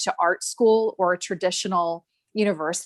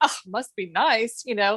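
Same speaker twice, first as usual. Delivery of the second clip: dismissive, sarcastic scoff. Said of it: "I used to kind of scoff and be like".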